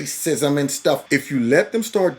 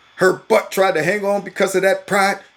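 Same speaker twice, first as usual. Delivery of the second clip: ordinary talk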